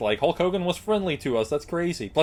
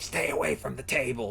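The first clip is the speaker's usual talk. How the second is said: put-on hissing voice, quieter; 7 dB quieter than usual. Telling of a book signing, the speaker quotes a lady guarding the table, imitating a hiss. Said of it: "she hissed and everything".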